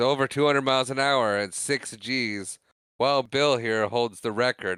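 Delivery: ordinary talk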